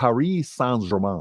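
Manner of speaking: put-on French accent. Saying the full team name for accent speakers: mock French accent. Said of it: "but I speak in an accent".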